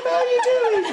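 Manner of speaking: very high, loud, ridiculous mocking squeak.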